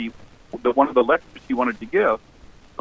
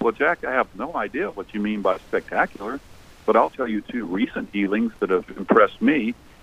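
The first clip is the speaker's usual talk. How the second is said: calm, even, composed, unruffled voice; 3 semitones lower than usual. Recalling a British man's reply to the speaker's question, mimicking a calm, quiet voice. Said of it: "in a sort of calm, quiet voice".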